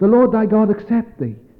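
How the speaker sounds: high, loud, urgent voice.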